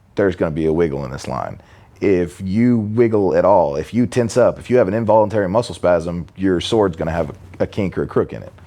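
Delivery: ordinary talk, nothing marked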